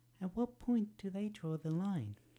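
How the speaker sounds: lifted into feminine register. Voicing Toga's lines, trying a Toga voice, feminine. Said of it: "I'm going to be trying a feminine voice for Toga".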